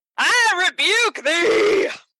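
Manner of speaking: very high, jokey, theatrical playful shout. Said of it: "are we done yelling at our audience?".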